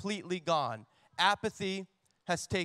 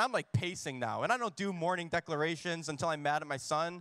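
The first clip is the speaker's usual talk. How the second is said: ordinary delivery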